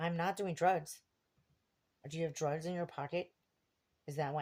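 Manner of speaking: pointed callout, said for all to hear. Speaker recalling a man reaching into his pocket outside a 7-Eleven, retelling saying it loudly. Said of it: "And I said it really loud in front of everybody".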